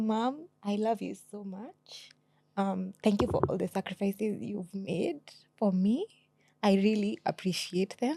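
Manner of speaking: tearful, on the verge of crying. Speaking to mom after being asked to appreciate her: tearful, close to crying. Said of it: "now I'm going to cry".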